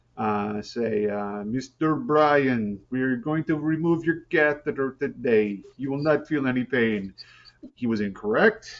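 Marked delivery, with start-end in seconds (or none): 1.4-7.1 put-on thick, laid-on German accent. Retelling what a hospital worker said: imitating a thick German accent. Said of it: "a very thick German accent".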